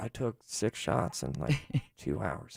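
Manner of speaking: sorrowful, sad, hushed, breathy near-whisper. Showing how switching the tone makes a line sound, in a sad tone. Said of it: "switch the tone of voice and listen to how sad that gets".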